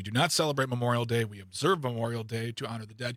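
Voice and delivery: plain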